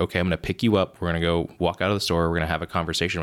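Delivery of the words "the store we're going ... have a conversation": ordinary talk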